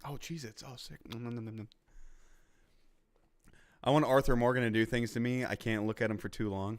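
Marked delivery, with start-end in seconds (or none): 0.0-1.7 mock boy munching sounds, quieter. Retelling what the kid did once the camera panned off: imitating the kid eating. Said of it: "he was just".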